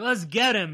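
usual speaking voice

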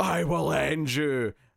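very slow, hostile, aggressive delivery. Retelling a film scene where the mother threatens someone: imitating an aggressive threat. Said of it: "the mum gets really aggressive and says".

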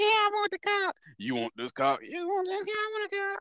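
clumsy put-on female voice, very high and swooping. Acting out both voices for a doll: attempting a female voice. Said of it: "I can't do the female voice".

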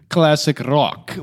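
put-on Italian accent. Telling how they answered a man's question, trying an Italian accent. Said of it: "I tried to say it like in Italian".

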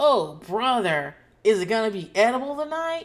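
put-on tv sitcom child delivery, high and loud. Imitating children answering a dinner call, like sitcom kids: imitating a sitcom kid. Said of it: "Like sitcom kids".

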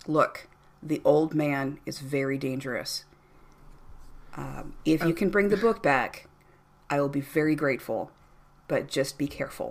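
dead serious, solemn, grave, earnest delivery. Voicing the bar guy warning the players: real serious. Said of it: "he gets real serious and leans forward on the bar and says".

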